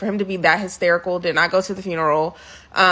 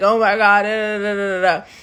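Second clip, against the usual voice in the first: theatrical put-on hysterical sobbing, words sobbed out. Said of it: "hysterically crying".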